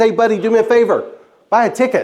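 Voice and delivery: ordinary talk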